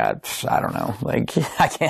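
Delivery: soft voice, laughing through the words. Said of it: "And I started laughing".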